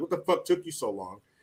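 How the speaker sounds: play-acted annoyed, angry, pissed-off complaining tone. Retelling a movie scene where characters stand waiting: imitating an angry complaint. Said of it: "they're standing there all pissed off".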